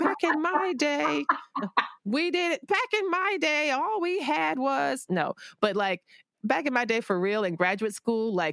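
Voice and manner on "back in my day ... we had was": very high, slow, put-on elderly voice. Talking about starting to sew years ago, in a mock elderly person voice. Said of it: "now I sound like a really elderly person".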